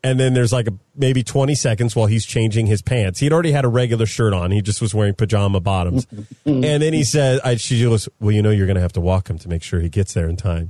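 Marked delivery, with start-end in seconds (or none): 8.2-10.7 put-on disappointed tone, lower and faster. Speaker retelling what a woman said to them, in a mock-disappointed tone. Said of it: "in that tone of voice where it's like, I'm not so much angry. I'm disappointed".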